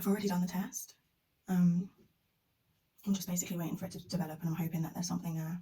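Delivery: hushed whisper. Waiting on a test result while keeping it from someone upstairs: whispering. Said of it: "I'm whispering because Yas is upstairs".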